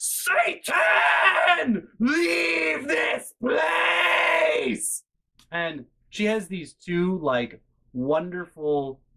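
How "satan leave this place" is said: acted-out shrill, drawn-out, rough-edged screech, very high. Retelling what a sister screamed while flying off with a pole: imitating a scream. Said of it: "what my sister screams as she's about to fly away".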